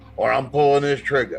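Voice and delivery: ordinary talk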